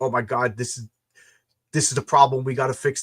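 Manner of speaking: put-on manic, frantic panic. Retelling calling someone the day before launch, imitating a manic panic. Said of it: "a manic crazy".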